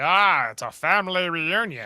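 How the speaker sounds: happy, welcoming, party-like exclamation. Retelling an episode scene, imitating Soong's voice. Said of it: "That's how he talks in my mind".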